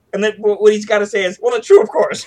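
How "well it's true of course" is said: raised, strained voice full of tension. Showing how an actor delivers his reply to Kirk, imitating a tense voice. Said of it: "he's got the tension in his voice".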